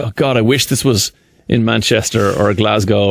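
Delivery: ordinary delivery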